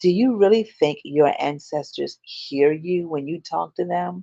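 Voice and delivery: hushed voice, near a stage whisper. Retelling what a woman at lunch leaned over and asked: retelling a near half-whisper. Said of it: "almost in a whisper".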